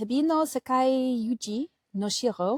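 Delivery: put-on French accent on every word. Asked to attempt a company name, saying it in a french accent. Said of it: "I gave it a French accent".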